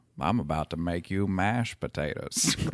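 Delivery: voice dropped way down, deep and soft. Speaker imagines the mom recast, saying her line in a Morgan Freeman voice. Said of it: "the mom in the Morgan Freeman voice".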